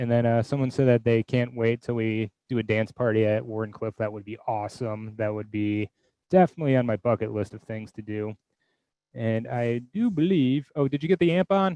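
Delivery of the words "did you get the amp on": shouting, higher pitch. Calling across the room to ask about the amp: yelling. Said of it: "Sorry for yelling".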